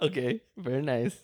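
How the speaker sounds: quiet, mock Eastern European accent. Reacting during someone's first interview, in a Borat voice. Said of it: "You sound like Borat when you do that".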